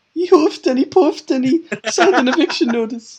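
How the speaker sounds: shrill, loud, belted near-Glaswegian accent. Showing the other speaker how the accent came out: Shrek pig impression, almost Glaswegian. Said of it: "almost came out like Glaswegian".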